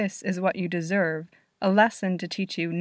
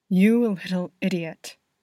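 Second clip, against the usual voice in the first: said in a hiss. Narrator reads Harry's line as he pins Eggsy against the wall, hissing. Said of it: "Harry hisses".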